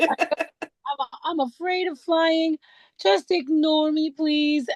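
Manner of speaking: crying, pleading voice, high and slow. Retelling what they said to a fellow passenger before a flight, a tearful plea. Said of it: "on a plane crying my little eyes out".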